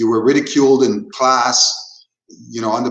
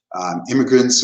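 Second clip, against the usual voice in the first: ordinary talk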